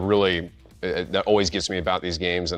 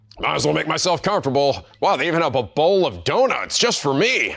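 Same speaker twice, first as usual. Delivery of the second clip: put-on dog voice, higher; 8 semitones higher than usual. Voicing the dog Missile while playing the game: Missile voice. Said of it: "Love your missile voice".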